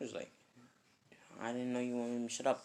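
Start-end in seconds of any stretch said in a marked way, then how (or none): none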